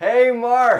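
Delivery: loud shouted call. Thanking a coworker after being told to do it loudly so the boss can hear: loud call. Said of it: "Loudly so the boss can hear".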